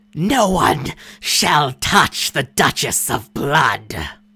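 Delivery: shrieked, unearthly monster creature voice. Game master voicing a wounded creature shrieking in Elven: shrieking creature voice. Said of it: "it shrieks out".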